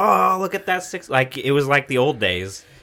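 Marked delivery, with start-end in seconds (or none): 0.0-1.1 rowdy, high, excited yelling scream. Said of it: "screaming at each other and laughing and being like".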